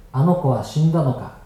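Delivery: ordinary delivery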